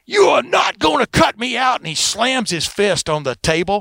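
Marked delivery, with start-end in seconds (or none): 0.1-1.8 put-on screaming at the very top of the range. Retelling a boxing promoter refusing to be cut out: imitating Don King screaming. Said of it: "Don King starts screaming".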